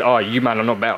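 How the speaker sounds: usual speaking voice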